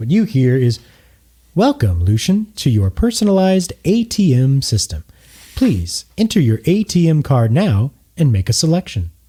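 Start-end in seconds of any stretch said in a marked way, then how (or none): 1.6-9.1 high, swooping machine announcement voice. Voicing an illuminated screen greeting a player: automated ATM system voice. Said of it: "you hear a voice coming from this illuminated screen".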